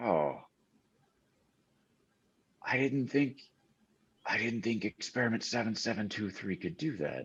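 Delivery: deep, low, soft mumble under the breath. Noticing Skippy watching, the character mutters to himself. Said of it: "He mutters to himself".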